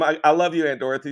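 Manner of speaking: normal talking voice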